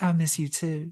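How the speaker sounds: touch of Southern twang. Recapping a couple getting back together at camp, voicing her reply: slight Southern twang. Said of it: "your slight little southern twang you put on".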